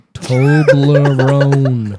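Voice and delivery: very slow, sounded-out word. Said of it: "Sound it out".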